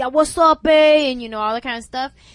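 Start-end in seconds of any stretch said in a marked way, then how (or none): 0.0-1.1 put-on very loud, drawn-out, heavy Latin American accent.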